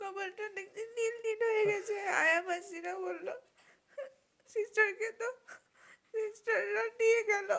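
tearful, sobbing through the words.

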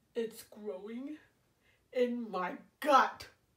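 loud, dramatic, panicky crocodile voice. Narrating a story as the crocodile, in a put-on crocodile voice. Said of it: "Ever since I was a teeny tiny baby crocodile".

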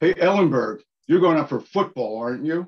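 loud, high hollered call, sounding distant. Retelling how the star athlete called across the street: imitating someone yelling out. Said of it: "he yells out to me".

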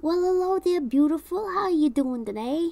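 put-on high old-man character voice. Retelling an older man greeting in a parking lot: Joe Pesci-ish voice. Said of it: "he sounded like a little Joe Pesci-ish".

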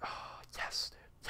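breathy, satisfied whisper full of relief.

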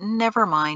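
usual speaking voice

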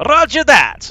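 failed put-on Russian accent. Playing a game, answering the squad leader's order, in a bad Russian accent. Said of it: "I can't do a Russian accent".

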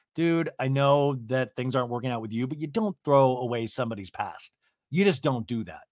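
ordinary talk, nothing marked

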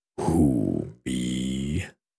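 deep, low dragon voice, words drawn out. Narrator reading a story, voicing an unseen speaker calling to Owl, deep voice. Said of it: "said a deep voice".

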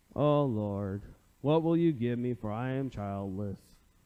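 slow, dragged-out, whiny complaining drawl. Reading Abram's reply to God as Eeyore would: whiny Eeyore voice. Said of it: "what I hear is whining, or maybe like Eeyore".

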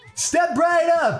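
lively, excited, enthusiastic. Retrying a line after asking if it sounded boring: more enthusiastic. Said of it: "I'll try to say it in a more enthusiastic way".

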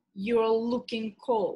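ordinary delivery

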